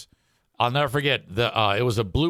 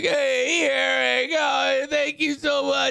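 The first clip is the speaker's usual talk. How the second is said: play-acted, drawn-out, very high, slow, teary crying. Retelling the kidney recipient thanking the speaker before surgery: imitating Jeffrey crying. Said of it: "He's crying".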